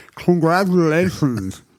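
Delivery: mushy put-on voice, as if through wooden teeth. Imagining a man with wooden teeth delivering a lottery check, mush-mouthed wooden-teeth voice. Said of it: "through his mush-mouth wooden teeth voice".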